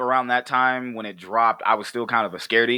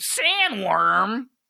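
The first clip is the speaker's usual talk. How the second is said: very high, squealing cartoon-character cry; 9 semitones higher than usual. Retelling how sandworms get named: Beetlejuice cartoon voice. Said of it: "I say it like he would in the cartoon".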